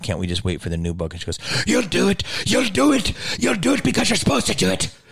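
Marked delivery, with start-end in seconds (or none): 1.7-4.9 put-on shrill, very high, partial Irish accent. Retelling what a woman said to the class, the speaker imitates her half Irish accent. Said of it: "she had like a half Irish accent".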